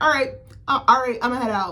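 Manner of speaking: high, loud, breezy, careless, tossed-off lightly.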